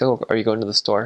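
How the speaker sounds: American-style asking tune. Showing how Americans ask a question: American way of asking. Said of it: "in America, we ask".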